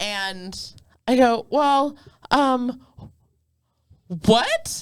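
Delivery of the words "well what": high, frozen, halting, confused hesitation. Retelling freezing up while she screamed at you, acting out a frozen hesitation. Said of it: "So I literally like froze".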